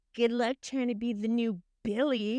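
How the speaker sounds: usual speaking voice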